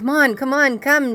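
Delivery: high, urgent, screaming call. Retelling looking back while running from a bear: retelling own screaming. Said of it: "screaming for Nafi".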